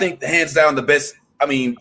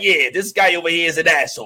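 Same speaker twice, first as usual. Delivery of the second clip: put-on New Jersey-accented speech; 2 semitones higher than usual. Speaker recalls how Cabal sounded in MK3, in Cabal's New Jersey accent. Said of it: "didn't expect him to have like a New Jersey accent".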